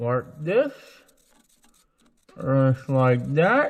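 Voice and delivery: speaking with obstructed mouth. Working on a part with a flashlight held in the mouth: talking with flashlight in mouth. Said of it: "I got the flashlight in my mouth".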